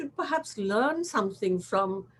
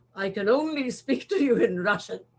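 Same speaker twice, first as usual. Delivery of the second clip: crude, very boorish way of talking. Recounting a speakerphone call from a man in Russia, imitating a boorish voice. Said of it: "in this like very boorish kind of voice".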